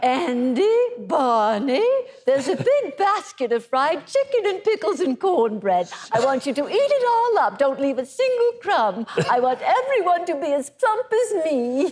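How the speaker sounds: sweet, doting aunt character voice. At your parents' candlelit dinner, launching into your best Aunt Bee impression. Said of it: "my best impression of Aunt Bee".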